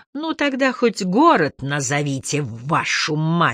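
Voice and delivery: words forced out through clenched teeth. Narrator reads Broussard demanding the city from Miss McCready, through gritted teeth. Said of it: "сказал Бруссерт сквозь зубы".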